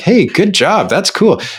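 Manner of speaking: high, approving tone. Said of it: "other people are like".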